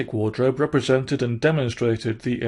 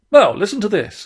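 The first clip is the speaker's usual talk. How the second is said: authoritative, commanding, raised call; 9 semitones higher, 6 dB louder than usual. Reading a story aloud, Rat's line to Mole: commanding manner. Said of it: "he said in a commanding manner".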